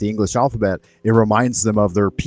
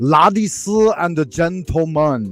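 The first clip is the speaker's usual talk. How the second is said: Chinese-accented English, spoken very slowly; 7 semitones higher than usual. Giving an example of English heard from Chinese learners: imitating Chinese learners' English accent. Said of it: "I'll give you an example of one that I hear all the time".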